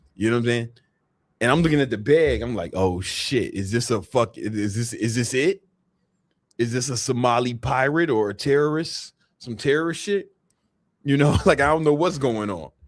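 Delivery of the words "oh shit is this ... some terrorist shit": ordinary talk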